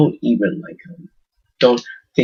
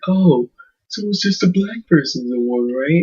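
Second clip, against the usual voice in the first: play-acted smug, dumb-sounding know-it-all tone; 4 semitones higher than usual. Speaker acting out a man's question, in a mock-smug tone. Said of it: "He has this like this smug".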